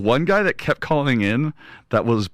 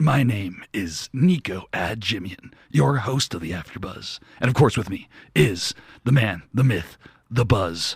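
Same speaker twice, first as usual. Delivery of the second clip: strange fake gruff voice; 3 semitones lower than usual. A podcast host introduces himself and his co-host: gruff Lego Batman voice. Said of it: "with that weird gruff voice".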